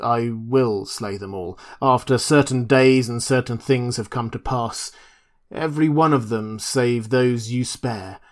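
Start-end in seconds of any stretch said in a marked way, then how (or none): none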